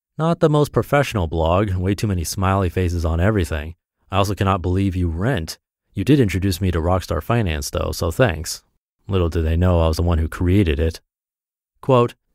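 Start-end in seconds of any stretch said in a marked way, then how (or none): none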